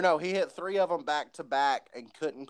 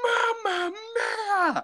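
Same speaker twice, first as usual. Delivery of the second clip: mock very high, all-out, top-of-the-lungs scream. Recalling a moment at a wrestling match, retelling a scream at top of lungs. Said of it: "screamed at the top of his lungs".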